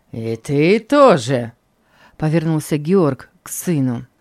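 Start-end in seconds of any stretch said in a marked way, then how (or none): 0.2-1.6 scornful, taunting, sneering, mocking tone. A man turns to his son with an unexpected question: mocking tone. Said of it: "произнесен таким насмешливым тоном".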